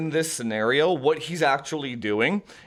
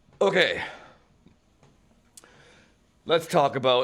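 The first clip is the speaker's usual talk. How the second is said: winded, breathless speech; 2 semitones lower than usual. A vlogger on a treadmill starts the topic for viewers, out of breath. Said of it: "I'm just out of breath here".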